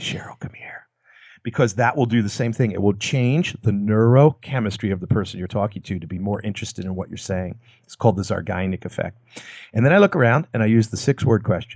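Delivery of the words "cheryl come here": very quiet, lowered, barely audible whisper. Demonstrating how to call a coworker over at work: lowered voice. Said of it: "lower your voice and say".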